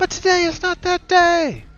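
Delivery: high, loud, rousing, rallying battle cry.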